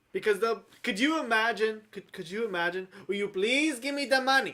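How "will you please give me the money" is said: polite, put-on Indian accent. Joking about an indian bank robber asking politely: imitating an indian accent. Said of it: "You did that pretty good".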